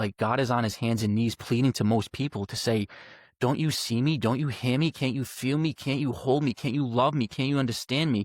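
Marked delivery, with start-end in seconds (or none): none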